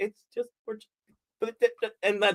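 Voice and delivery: halting, tongue-tied stumbling over words. Retelling how he sounded when she questioned him: imitating his own flustered stammer. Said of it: "that's kind of what I sounded like".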